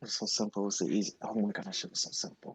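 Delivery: very soft muttering. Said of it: "you're kind of muttering".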